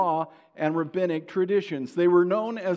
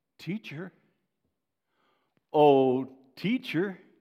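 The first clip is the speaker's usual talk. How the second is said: respect dripping with sarcasm, falsely respectful; 3 semitones lower than usual. Speaker acting out the spiritual leaders addressing Jesus, with put-on sarcasm. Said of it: "I believe that sarcasm dripped from their lips".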